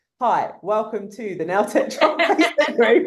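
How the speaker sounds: word-for-word scripted teleprompter reading voice. Retelling an early video of reading off a teleprompter: imitating own teleprompter reading. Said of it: "I literally am like this, reading on a, a tele-, I'm like".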